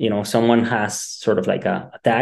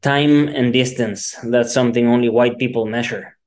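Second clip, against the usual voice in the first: usual speaking voice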